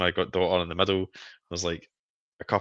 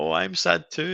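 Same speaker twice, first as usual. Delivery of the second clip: very high, big put-on wailing sobs; 11 semitones higher than usual. Retelling how she tried to make the speaker feel better, imitating a big fake cry. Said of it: "starts doing a big fake cry".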